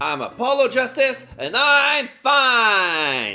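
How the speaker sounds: loud shout. Before a trial, he goes first to show how to shout: loud shout. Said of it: "shouting, I'm fine, in a loud voice".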